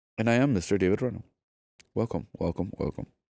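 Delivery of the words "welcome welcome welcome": calm, chill, soft, serene delivery. A podcast host welcoming the guests, quiet and serene. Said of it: "I feel like I'm very quiet and serene".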